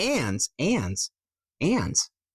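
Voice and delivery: "and" stressed high, one after another. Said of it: "How I say ands".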